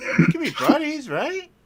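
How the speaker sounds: very high, laughing, mock-friendly demon voice.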